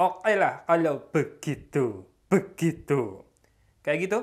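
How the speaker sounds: a bit of a medok Javanese accent. Testing how a voice sounds, the speaker talks in a slightly thick Javanese accent. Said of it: "saya akan coba bicaranya rada medok".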